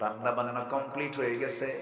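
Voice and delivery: soft, hushed, quiet murmur.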